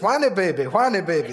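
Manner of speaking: good put-on Louisiana accent. Retelling how she teased him on the way to eat, good Cajun accent. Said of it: "In a good Cajun accent".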